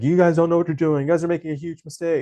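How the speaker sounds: high-pitched, rushed, screaming rant. Retelling a story where the guy runs away screaming at the drag queens, retelling a scream. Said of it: "he's like screaming at them".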